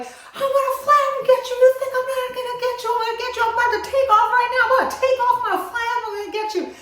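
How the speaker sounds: loud, high-pitched hollering. Retelling flapping under a tree at a hawk: retelling a yell. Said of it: "And I'm yelling this at him".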